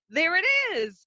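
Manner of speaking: sudden, very high cry. Retelling a scene where Toph suddenly spots something: imitating Toph exclaiming. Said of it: "she exclaims".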